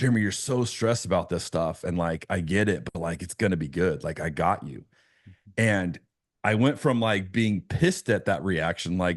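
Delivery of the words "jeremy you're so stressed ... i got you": easy put-on voice broken by light chuckles. Speaker retells an imagined Jesus speaking to him, arm around him; retelling chuckling speech. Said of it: "saying it with like a chuckle".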